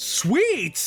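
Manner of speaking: shrill, very loud, high-pitched blurt. Retelling what a man said when asking a question, very loud. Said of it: "he says very, very loudly".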